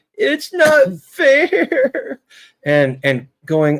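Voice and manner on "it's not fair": very high, whiny, blubbering crying voice. Mocking people who melted down, imitating them crying. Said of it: "a grown person crying and going".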